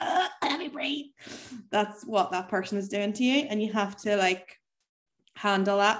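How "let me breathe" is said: high, squeezed, pleading puppy voice. Explaining clingy people with a puppy analogy: voicing a squeezed puppy. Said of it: "the puppy's like".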